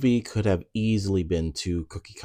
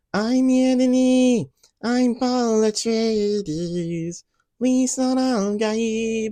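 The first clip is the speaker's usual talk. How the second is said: bad put-on drawl, high pitch, every word stretched; 4 dB louder than usual. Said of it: "stuck in a perpetual [name] voice ... that was a bad [name] impression".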